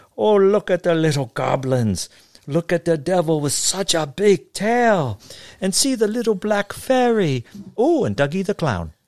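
put-on heavy German accent, pitched way up. Reading a story aloud, voicing a neighbor greeting trick-or-treaters: thick German accent. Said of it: "in her thick German accent said".

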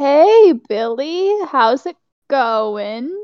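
very slow, unhurried, drawn-out delivery. In the scene, Emerald greets Billy, very slow. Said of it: "just very slowly is just like".

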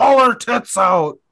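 high, slow, loud scream. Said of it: "in the crowd screaming".

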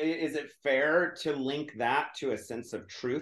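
ordinary delivery

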